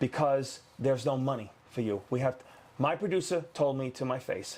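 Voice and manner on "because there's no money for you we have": ordinary talk, nothing marked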